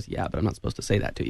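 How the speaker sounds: quiet, hushed, confidential whisper. Retelling what the man with the modem said back, quietly. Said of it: "he kind of quietly goes".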